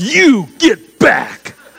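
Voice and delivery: firm, loud, authoritative commanding tone. Speaker retells how they answered an enemy: mock authoritative command. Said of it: "authoritative voice like that".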